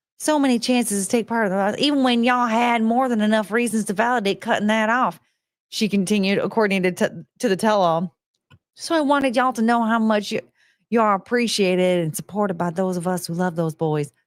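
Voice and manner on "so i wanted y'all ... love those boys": put-on American Southern accent. Reading aloud a quote from a tell-all, in a Southern accent. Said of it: "What's with the Southern accent?".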